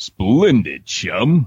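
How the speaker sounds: swooping, swinging cartoon superhero voice. Asked to let them hear it, speaker does a Tick impression. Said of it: "I can do a great Tick impersonation".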